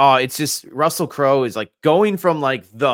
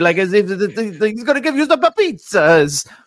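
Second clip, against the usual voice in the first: put-on awful Italian accent, much higher, slower; 7 semitones higher than usual. Describing Russell Crowe in a movie, doing Russell Crowe's awful Italian accent. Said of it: "he talks like this pretty much the whole movie".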